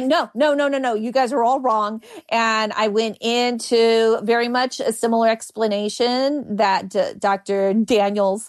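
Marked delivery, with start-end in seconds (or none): none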